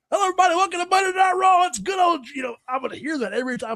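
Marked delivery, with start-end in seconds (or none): 0.1-2.2 high ring-announcer style voice. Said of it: "you sound so much like Jim Ross".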